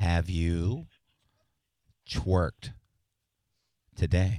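slow and deliberate. Told they are talking too fast, the speaker asks again: slowly and deliberately. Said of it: "I'll slow down".

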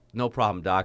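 ordinary talk

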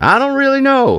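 very high-pitched fake Southern accent. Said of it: "he puts on a fake Southern accent".

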